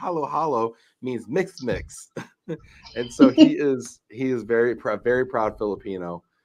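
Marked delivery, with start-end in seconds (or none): 0.0-2.1 put-on lispy six-year-old voice, quieter. Quoting a young son explaining what a word means, in a lispy six-year-old voice. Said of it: "in his cute little lispy six year old voice".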